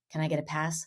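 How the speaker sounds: secretive, conspiratorial, leaning-in tone. Retelling how a son asks about a curse word: imitating conspiratorial tone. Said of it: "he'll lean in all conspiratorially and say".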